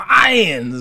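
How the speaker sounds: little growl on "lions", drawn out. Showing how the word comes out, with a slight growl on 'lions'. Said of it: "a little bit of a growl in there".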